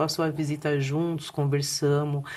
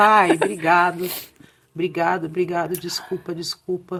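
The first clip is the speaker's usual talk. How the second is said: speaking through tears; 2 semitones higher, 4 dB louder than usual. Retelling thanking her father at a visit: imitating own crying. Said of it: "E eu chorava".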